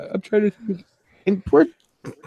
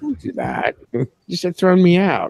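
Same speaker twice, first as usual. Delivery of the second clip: ordinary talk, nothing marked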